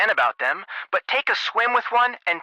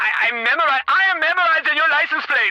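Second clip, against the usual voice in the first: high, loud yelling; 10 semitones higher than usual. Driving while on the phone, at a slow swerving driver: yelling at another driver. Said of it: "I know you know I'm yelling".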